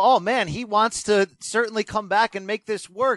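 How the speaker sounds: plain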